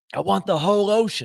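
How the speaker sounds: shrill high-pitched screaming. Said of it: "He's screaming at you".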